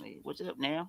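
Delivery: very quiet, hushed Southern country accent. Explaining how people from the South talk, the speaker demonstrates: imitating a Southern accent. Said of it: "that's how people from the South talk".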